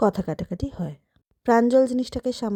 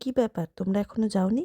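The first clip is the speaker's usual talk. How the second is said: ordinary delivery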